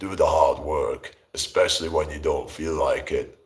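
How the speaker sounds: deep voice dropped right down. Imitating a fitness influencer's advice: deep-voiced Hamza impression. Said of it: "deep voice".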